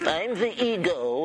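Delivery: cartoon character voice.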